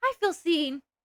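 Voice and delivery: fearful, timid, scared little voice. Saying that viewers relate, in a scared voice. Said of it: "in the most scared way".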